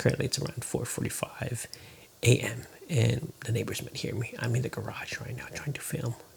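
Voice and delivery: hushed, soft, breathy whispered voice. Filming in the garage early morning so the neighbors won't hear, whispering. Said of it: "I'm a bit whispering".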